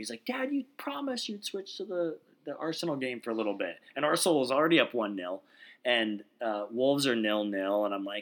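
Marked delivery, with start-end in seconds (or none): 0.3-3.8 high, sing-song, pleading voice. Retelling a son begging to switch to another game: imitating a son begging. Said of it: "begging me to switch from the Wolves game".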